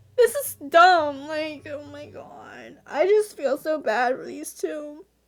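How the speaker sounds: speaking through tears. Reacting to a story, crying while talking. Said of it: "Why am I crying?".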